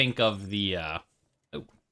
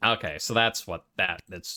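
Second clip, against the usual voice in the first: usual speaking voice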